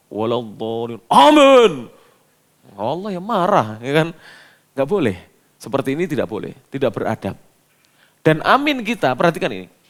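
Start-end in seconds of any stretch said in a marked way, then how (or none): 0.1-1.7 full-throated loud shout, swooping wildly. Showing the improper way of saying amin that is not allowed: shouted loudly. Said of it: "Kalau saya teriak-teriak".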